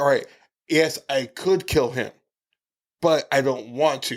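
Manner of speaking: usual speaking voice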